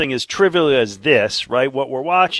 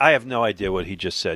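plain

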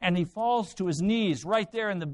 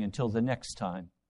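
put-on whispered aside, lower and quieter; 10 semitones lower, 5 dB quieter than usual. Acting out a hidden thought after a firm promise: imitating a quiet under-breath mutter. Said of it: "very quietly under your breath".

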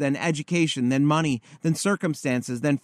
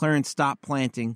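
normal talking voice

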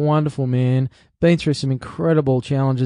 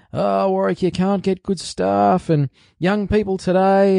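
put-on grumpy, grumbling old man voice, pitched up; 6 semitones higher than usual. Quoting what tradies often tell him, the speaker uses an old man voice. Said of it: "I'm doing sort of an old man voice".

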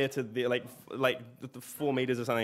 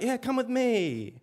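put-on very high, slow, patronizing, talking-down baby voice; 11 semitones higher, 4 dB louder than usual. Recalling a man who talked to them like a baby, the speaker imitates his patronizing baby talk. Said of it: "like very sort of patronizingly".

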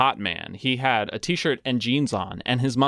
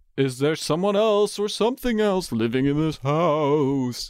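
eerie spooky voice, the word house stretched out; 5 semitones higher than usual. Asking the Ouija board a question the way it must be asked, spooky voice. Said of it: "You have to ask the Ouija board in that voice".

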